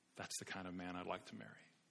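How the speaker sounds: soft hushed voice.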